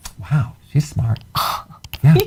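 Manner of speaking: genuinely surprised, astonished, caught-off-guard exclamation. After someone correctly answers a biology question, speaker reacts, surprised. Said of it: "You sound so surprised".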